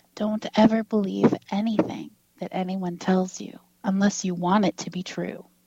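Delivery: whispered voice. Retelling what a man leaned in close and said to him, retelling a whisper. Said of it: "he whispers again".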